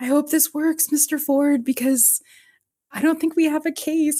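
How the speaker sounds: put-on, very high, trembling, frightened, tremulous quaver. Retelling her answer when he calls her on the phone, imitating Tara's scared voice. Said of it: "she's so scared and tremulous".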